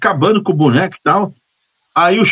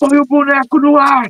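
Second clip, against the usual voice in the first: put-on calm, unhurried, slow shout, high pitch; 7 semitones higher than usual. Retelling the director shouting an order in his earpiece: imitating the director shouting. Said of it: "eu ouço o diretor gritar assim".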